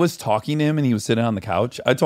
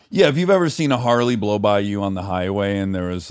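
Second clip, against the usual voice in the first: normal talking voice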